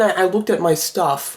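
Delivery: ordinary delivery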